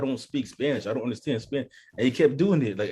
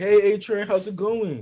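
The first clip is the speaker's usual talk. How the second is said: high, loud, mock phony friendly tone; 8 semitones higher, 5 dB louder than usual. Imitating Homelander greeting A-Train: fake friendly Homelander voice. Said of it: "fake as fuck".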